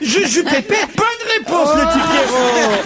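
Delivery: put-on high, cooing baby talk with laughter.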